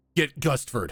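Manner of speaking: shouted out loud in a character voice. Voicing a character calling to the group over his shoulder: yelling in character. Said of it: "he's just gonna yell".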